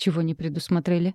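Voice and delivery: plain reading voice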